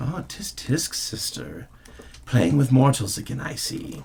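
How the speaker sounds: soft, hushed, raspy murmur from deep within. Narrating a scene, voicing the hidden figure under the rags: soft, raspy voice. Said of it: "the soft, raspy voice that emanates from the depths of the rags".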